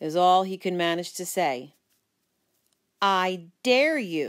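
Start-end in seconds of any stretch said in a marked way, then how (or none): 3.0-4.3 bold, daring, defiant, challenging tone. The narrator dares a boy as a crowd gathers, defiant. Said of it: "I said defiantly".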